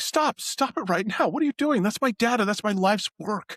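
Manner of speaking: very high, anxious, worried pleading tone. Voicing the doctor as a player smashes his computer: worried doctor. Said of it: "the worry in his face".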